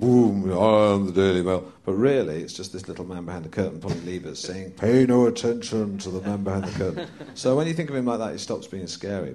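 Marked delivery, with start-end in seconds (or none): 0.0-1.7 big, grand, booming voice, drawn out. Picturing the Daily Mail as the man behind the curtain: booming Daily Mail voice. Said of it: "that's got a big booming voice".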